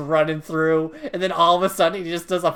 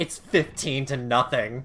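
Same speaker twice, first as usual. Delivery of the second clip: ordinary talk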